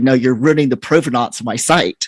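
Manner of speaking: normal talking voice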